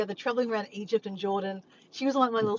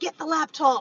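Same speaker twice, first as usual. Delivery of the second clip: play-acted rude, high, barking shouted yell; 6 semitones higher, 4 dB louder than usual. Retelling an order given to the maid: imitating someone yelling. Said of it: "He's yelling at her".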